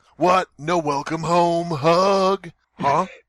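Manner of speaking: obnoxious hoarse voice. Reading a story aloud, voicing a husband greeting his wife: raspy voice. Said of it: "her husband began in a raspy voice".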